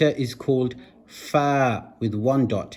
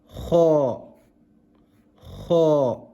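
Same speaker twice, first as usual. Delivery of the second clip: "kha" said heavily, as with a full mouth. Showing learners how to pronounce the Arabic letter: kha with a full mouth. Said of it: "It's kha with a full mouth".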